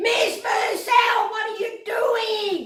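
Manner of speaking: put-on shrill, high-pitched, drawn-out scream. Retelling how the teacher walked in on the mess: imitating a screaming teacher. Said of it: "she screamed".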